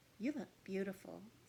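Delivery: quiet-toned, intimate, hushed delivery. A narrator reads a girl's line after she braids the narrator's hair, in a hushed voice. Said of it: "says Prim in a hushed voice".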